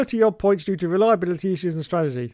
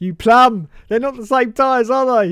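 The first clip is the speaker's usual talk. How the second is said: mock angry raised, pitched-up shout; 5 semitones higher, 5 dB louder than usual. Doing an impression of himself at the screen, put-on shouting at the screen. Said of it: "I do an impression of me shouting at the screen".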